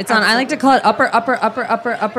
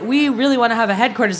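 ordinary talk, nothing marked

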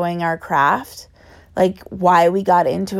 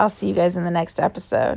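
rough, rasping, hoarse voice; 3 dB quieter than usual. Signing off at the end of an episode, apologizing for the voice, raspy voice. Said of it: "Sorry for my raspy voice".

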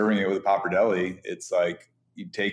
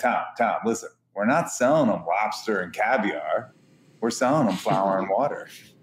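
put-on thick East Coast twang, blunt and straight. Retelling his reply after the speaker said he hated it: East Coast accent. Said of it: "in his East Coast accent".

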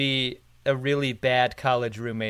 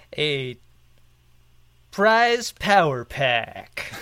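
breakfast-show morning radio DJ patter. Ending a t-shirt and poster giveaway plug, the speaker tries a morning drive DJ voice. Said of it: "trying to summon like morning drive DJ host voice".

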